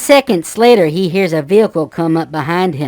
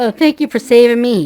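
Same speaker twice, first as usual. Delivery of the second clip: mock teary, high, sobbing, grateful tone; 6 semitones higher than usual. Retelling a rescued man thanking loggers: imitating someone crying.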